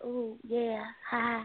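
put-on feminine voice. Told by another to sound more feminine, trying a put-on feminine voice. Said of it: "Put some femininity in your voice".

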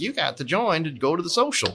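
pushy, insistent tone. Retelling being cornered at a social, imitating Lee Hubbard. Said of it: "That was a good Lee impression".

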